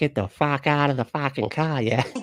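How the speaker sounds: put-on Boston accent. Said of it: "is that Boston?".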